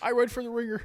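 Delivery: very high voice. Doing an impression when the others ask to hear it: Bill Simmons impression. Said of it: "my Bill Simmons impression".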